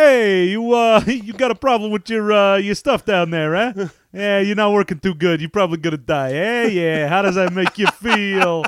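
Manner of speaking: loud, high-pitched, callous New York accent.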